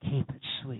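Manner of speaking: whispered, hushed line. Leading everyone to whisper a short phrase together: whispering. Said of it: "Whisper it again".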